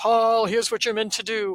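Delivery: grand, big booming pronouncement. Describing how guidance does not arrive, in a big booming voice. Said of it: "it doesn't come in this big booming voice".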